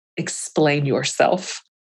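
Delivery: chilling, low, terrifying voice. Quoting Ginny confronting a girlfriend over a sweatshirt, retelling a low, terrifying voice. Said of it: "in a low, terrifying voice said".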